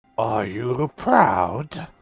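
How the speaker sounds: very deep voice, almost watery. A figure sitting cross-legged on the floor, staring at everyone, speaks in a very deep, watery voice. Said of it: "in a voice very deep and almost sounds watery".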